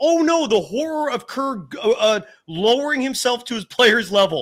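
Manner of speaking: high, facetious, fake-horrified sarcastic tone. Criticizing a lack of communication with players: sarcastic mock horror. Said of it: "I'm being facetious saying that".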